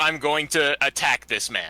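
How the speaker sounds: ordinary talk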